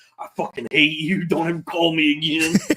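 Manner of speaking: acted-out bitter, hateful, furious ranting. Retelling own outburst after hanging up a call: imitating own angry venting. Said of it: "I just start venting".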